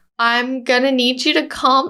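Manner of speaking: put-on laughing through words. Retelling their reply to an angry man's complaint, retelling laughing while talking. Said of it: "I'm like sort of laughing because it's so ridiculous".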